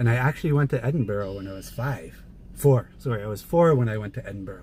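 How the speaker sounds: ordinary delivery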